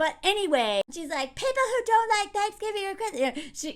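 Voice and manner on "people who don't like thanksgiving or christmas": very upset, exasperated, high-pitched voice. Retelling a character's outburst about people who dislike christmas: imitating someone upset. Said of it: "she gets very upset".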